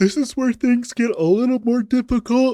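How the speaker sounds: very high words stretched out through a yawn. Speaker explaining a game level to listeners after a long night, yawning while talking. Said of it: "Sorry, I'm yawning".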